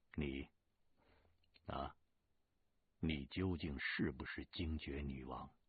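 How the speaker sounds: plain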